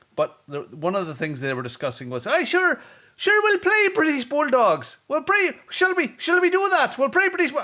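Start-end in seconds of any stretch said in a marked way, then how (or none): 2.3-7.6 put-on very broad southern Irish accent, pitched high, loud. Retelling what a crowd of late-arriving kids were discussing, thick southern irish accent. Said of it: "very thick Southern accent".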